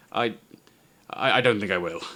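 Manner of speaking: stuttering hesitantly, stammering. Voicing a character dared to poke a dead thing with a stick, stammering. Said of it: "he stammers for a moment".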